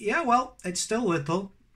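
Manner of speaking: sarcastic, quickly fired-back retort. Retelling his answer to a neighbour's jab about his business: retelling a sarcastic reply. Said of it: "Getting the sarcasm back".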